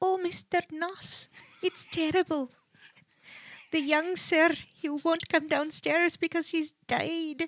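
put-on soft, high-pitched Irish housemaid-style accent. Asked for a taste, speaker recreates a woman's accent from that episode. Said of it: "You recreated her accent fairly spot on".

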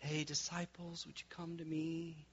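hushed, very soft, gentle epic film tone. Describing how Jesus sounded in older movies, soft movie Jesus voice. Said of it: "it's kind of like a soft".

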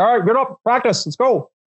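blunt, no-nonsense, curt instructor-style delivery. Retelling how the head instructor talked while seated: imitating Pavel Tsatsouline. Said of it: "He's like".

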